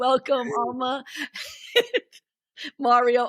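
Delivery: laughing slightly through words. Host welcoming guests at the start of the show, giggling. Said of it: "I'm sorry, I'm giggling".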